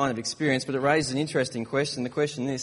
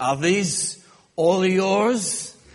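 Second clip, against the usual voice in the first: heavy put-on European accent, loud and slow; 5 semitones higher, 6 dB louder than usual. Retelling what a short stranger asked: imitating a thick European accent. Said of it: "with a thick European accent".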